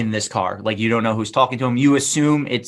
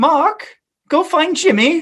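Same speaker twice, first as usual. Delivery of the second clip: very high, fake hippie woman's accent; 4 dB louder than usual. Retelling what one of the hippie women says: put-on accent. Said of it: "I don't know why I gave her that accent".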